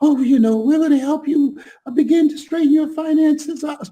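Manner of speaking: mock timid, hedging, mealy-mouthed, very high voice. Retelling a coaching client's pitch: imitating mealy-mouthed speech. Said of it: "she came on just really mealy-mouthed".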